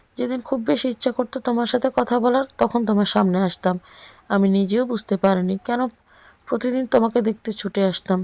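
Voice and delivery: plain reading voice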